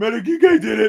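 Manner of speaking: very high, loud, belted movie-hero cry. Acting out a bloodied victory speech: Rocky voice. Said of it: "I'll be like Rocky".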